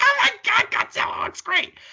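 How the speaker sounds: put-on, very high, thrilled, excited kid squealing. Speaker recalls reacting to the Godzilla teaser trailer as a kid, retelling an excited squeal. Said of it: "I was like squealing like a kid".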